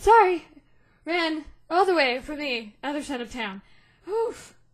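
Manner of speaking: winded, out of breath, still catching breath. Narrating to the players, voicing Arena arriving after running across town: out of breath. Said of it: "She's catching her breath for a second".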